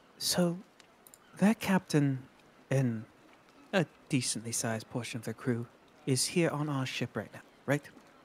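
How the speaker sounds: soft, conspiratorial half-whisper, very close. Voicing a character who goes up to the captain and half-whispers into his ear: half-whispering. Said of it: "She's gonna whisper into his ear".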